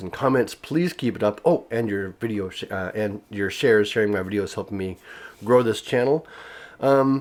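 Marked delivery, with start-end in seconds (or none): none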